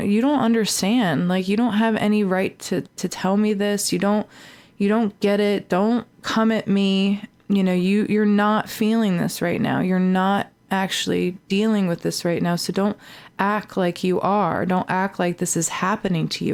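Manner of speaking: ordinary delivery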